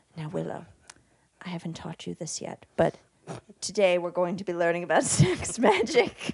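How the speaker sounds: hushed, secretive whisper. Acting out an imagined movie scene where she whispers to willow. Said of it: "she just whispers to him".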